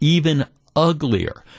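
plain

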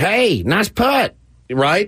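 put-on backwoods hillbilly accent. Recalling imitating a buddy on the air, Foster's hillbilly voice. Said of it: "imitate our buddy Foster's hillbilly voice".

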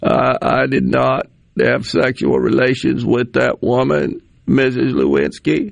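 slow, creaky, rough, deliberate, drawn-out delivery. Mocking a speaker on the radio by imitating Bill Clinton. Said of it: "he's starting to sound like Bill Clinton".

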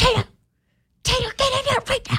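put-on hushed yelling. Retelling calling a dog back inside at night: retelling a hushed yell at a dog. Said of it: "I'm just yelling at him as quietly as I can".

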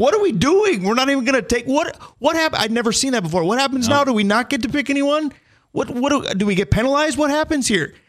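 high, frantic, beside-himself screaming shouts. Recounting watching the draft on TV, retelling screaming at the TV. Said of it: "I am screaming at the TV".

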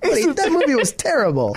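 very high bad British accent, swooping pitch. Retelling what Lawrence said on a dog walk: Lawrence's bad British accent. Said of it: "this is my bad British accent".

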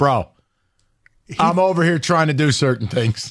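put-on deadpan delivery. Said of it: "he just deadpans to you and he's like".

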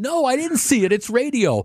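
acted yelling, voice very high. Retelling yelling back at the radio broadcasters in the car, retelling a yell. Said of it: "I'm yelling in the car".

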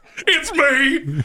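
diabolical, sinister put-on clown voice. Joking with co-hosts, answering in a diabolical clown voice. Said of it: "Did your diabolical clown voice?".

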